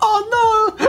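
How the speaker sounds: very high, fast, wailing, distraught Italian man voice. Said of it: "I just picture an Italian man going".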